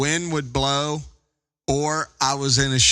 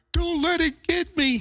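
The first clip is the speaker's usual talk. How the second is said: acted, very high-pitched holler. Retelling what a wife called out from the lake: imitating wife hollering. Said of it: "she hollered".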